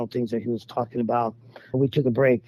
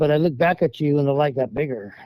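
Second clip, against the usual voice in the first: normal talking voice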